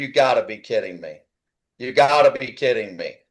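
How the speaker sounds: put-on incredulous, low, stunned, sinking disbelief. Speaker recounts watching the race result with his kid, retelling own disbelief. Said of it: "I'm like".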